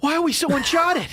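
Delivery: put-on Boston accent. Doing a Mark Wahlberg impression in conversation, Mark Wahlberg Boston accent impression. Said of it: "you just do a Boston accent".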